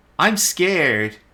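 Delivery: high put-on girlish voice. Voicing a character named Flit answering a question: girl's voice. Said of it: "Flit would say in a girl's voice".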